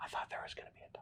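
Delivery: very soft, hushed, barely voiced whisper. Voicing a heartbroken knight who notices the dog is gone: whispering. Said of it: "there's this whispering".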